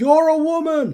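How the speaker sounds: high, loud, rude yelling. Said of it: "one very rude student will yell out".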